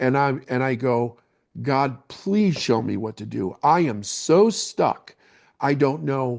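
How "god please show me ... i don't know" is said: re-enacted heavy sobbing, ugly-crying. Retelling breaking down in a trailer and praying, re-enacting a sobbing prayer. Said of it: "sobbing like an ugly cry".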